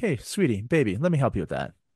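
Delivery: ordinary delivery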